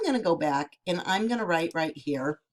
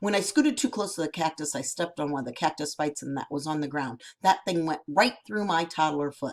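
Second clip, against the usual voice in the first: ordinary delivery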